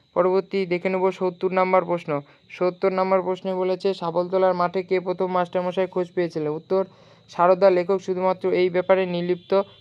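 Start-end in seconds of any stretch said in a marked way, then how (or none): none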